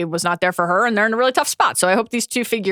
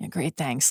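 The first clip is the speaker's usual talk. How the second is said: said very quietly, subdued; 5 semitones lower, 8 dB quieter than usual. Retelling a character's reply in a scene, imitating someone speaking very quietly. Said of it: "Matt just very quietly said".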